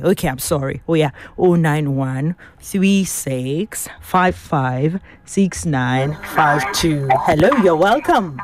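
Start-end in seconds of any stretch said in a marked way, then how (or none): 1.4-7.1 very slow delivery, each part spaced out. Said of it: "let me take it real slowly".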